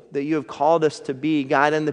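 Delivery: ordinary delivery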